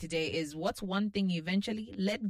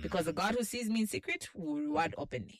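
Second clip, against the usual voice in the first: ordinary delivery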